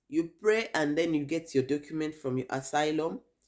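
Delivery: plain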